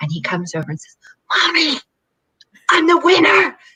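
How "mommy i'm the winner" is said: higher, put-on child's whisper. Retelling what a son whispers in a shared office: imitating a son whispering. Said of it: "he knows he has to whisper".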